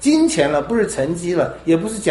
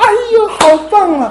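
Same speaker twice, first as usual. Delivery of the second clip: very high, overdone, exaggerated gushing, acted out; 6 dB louder than usual. Mimicking how we praise a child's small deed, imitating exaggerated praise. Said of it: "我们那个腔调那个夸张的".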